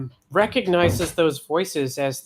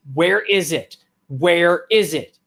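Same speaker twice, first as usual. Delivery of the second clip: very angry, furious screaming; 2 semitones higher, 4 dB louder than usual. Narrating a scene, the speaker voices someone screaming at two kids: angry screaming. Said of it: "a very angry voice uh, screaming at them".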